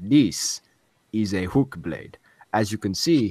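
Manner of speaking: put-on very loud, heavy, thick Italian accent. Retelling a video game scene, quoting another character: thick italian accent. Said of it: "in his thick Italian accent".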